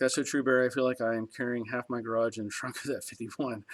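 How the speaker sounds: ordinary delivery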